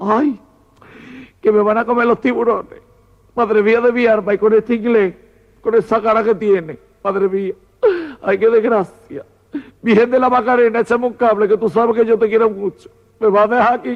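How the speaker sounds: high-pitched, frantic, terrified, panicked fretting. Speaker telling a joke about two castaways on a log, mock-terrified panicking. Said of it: "La mariquita muerta miedo".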